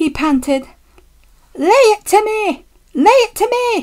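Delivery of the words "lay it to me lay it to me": shouted, very high-pitched and urging. Pushing from behind as another engine loses steam on the hill, shouting. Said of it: "shouted Douglas".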